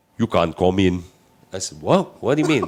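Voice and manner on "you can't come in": put-on foreign accent, sounding a little Austrian. Retelling what the official checking the passport said, in an accent sounding a little Austrian. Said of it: "I know I sound a little Austrian now".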